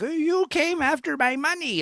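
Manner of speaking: put-on old woman voice, very high and slow. Describing a young actress in old-age makeup and quoting her, old lady voice. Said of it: "doing the old lady voice".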